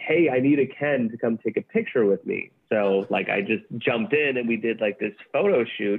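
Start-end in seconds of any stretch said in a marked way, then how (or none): none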